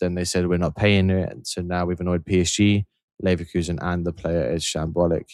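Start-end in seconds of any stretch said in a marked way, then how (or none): none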